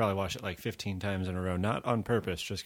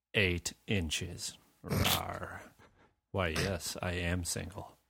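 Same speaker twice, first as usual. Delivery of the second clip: put-on, mock-creepy voice. Describing people met on a night out, imitating a really creepy guy in a put-on creepy voice. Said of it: "I'll try to do this in a creepy voice".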